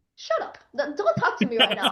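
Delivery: play-acted mad, angry, pissed-off delivery. Retelling being mad at a castmate who mispronounced a character name: retelling getting mad. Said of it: "I got so pissed. I got so mad".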